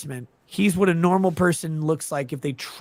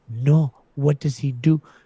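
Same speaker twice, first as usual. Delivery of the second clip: put-on Spanish accent, words drawn out. Retelling a woman's reply when introduced to someone: imitating her Spanish accent. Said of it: "like if she was doing a Spanish accent".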